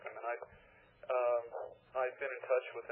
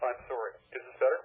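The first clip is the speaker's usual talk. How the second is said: louder, raised voice. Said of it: "You need to talk louder".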